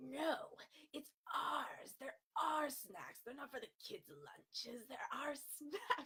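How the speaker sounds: small, possessive creature voice. Voicing the Gollum side of their brain in an inner argument, Gollum impersonation. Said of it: "don't mind my Gollum impersonation".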